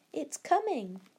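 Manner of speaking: high, eager, excited cry. Reading Barney as the tree cracks on their third pull, cried excitedly. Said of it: "cried Barney excitedly".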